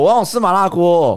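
put-on shouting. Retelling getting hungry at halftime, the speaker re-enacts it, retelling a shout. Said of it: "我就大喊说".

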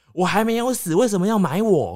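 mock piercing, very high, loud, shrill shriek. Grandmother lunging from the dark at the narrator's father, shrill shriek. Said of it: "尖声厉叫".

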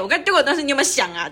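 play-acted smug, know-it-all, pressing, accusing tone. Imitating what the uncle just said, mock know-it-all accusing tone. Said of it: "就一副就是我已经做好功课了，你没有做你就死定了，这是语气。".

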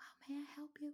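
tiny, hushed, high, turned-down little voice. Describing a coffee shop barista who spoke far too softly: imitating a tiny quiet voice. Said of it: "谁把她的声音调小声了".

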